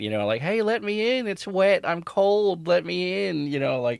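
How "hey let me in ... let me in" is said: eerie, creepy, slow, high-pitched put-on voice. Describing something that mimics your mom's voice at the door at night, imitating a mom's voice. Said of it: "like your mom or your grandma's voice at the door at night".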